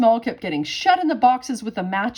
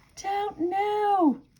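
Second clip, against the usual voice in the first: tiny, small, very high-pitched little voice; 11 semitones higher, 5 dB quieter than usual. Narrator reads a character's reply to another character's question, in a small voice. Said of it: "said Mister Small in a small voice".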